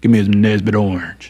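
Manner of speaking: put-on deep, low voice, a boy's deepest possible. Retelling how a boy planned to order a soda, imitating his deepest voice. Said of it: "in his deepest voice saying".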